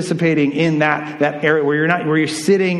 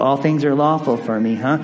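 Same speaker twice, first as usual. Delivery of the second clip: low-pitched mocking mimicry; 4 semitones lower than usual. Explaining Paul's letter, the speaker quotes the Corinthians' claim: mimicking, mocking tone. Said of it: "mimicking, mocking tone".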